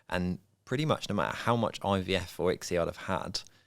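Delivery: ordinary delivery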